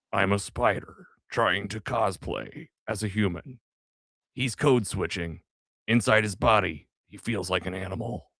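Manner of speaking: gritty noir superhero character voice. Reading a quote aloud, trying the best impression: Nick Cage Spider Noir voice. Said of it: "in Nick Cage's best Spider Noir voice".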